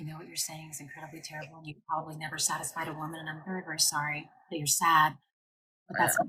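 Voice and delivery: soft put-on ASMR half-whisper. Recounting half-whispering to men on live panels: acting out a half-whisper. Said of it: "and I just whisper".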